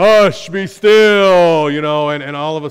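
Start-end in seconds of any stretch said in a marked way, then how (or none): 0.0-1.7 very loud, high, stretched, calming voice. Picturing how a loud Jesus rebuked the sea: loud Jesus voice.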